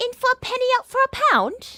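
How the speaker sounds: very high, loud put-on British accent. Asked to say something British, the speaker answers in a British accent. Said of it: "Say something British".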